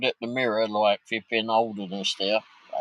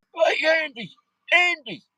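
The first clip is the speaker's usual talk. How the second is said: mock loud shout, much higher pitched and slower; 3 dB louder than usual. Retelling how a woman shouted across to a bloke, retelling a loud shout. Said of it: "she shouts over to this bloke".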